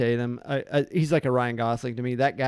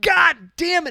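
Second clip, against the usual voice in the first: abrupt, sudden, very high-pitched, loud yell; 8 dB louder than usual. Retelling a movie scene where Michael Madsen yells: imitating Michael Madsen yelling. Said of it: "He just yells".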